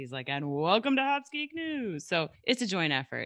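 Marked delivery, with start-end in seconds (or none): 0.3-2.1 retro sixties broadcast announcer voice, pitched up. Co-host showing how she sounds when hosting, 1960s TV show host voice. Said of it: "I sound like I'm running a TV show from the 60s".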